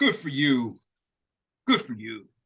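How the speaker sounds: slow, loud, condescending, patronizing tone. Voicing a character praising the group's soup kitchen work: patronizing. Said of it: "Don't patronize us".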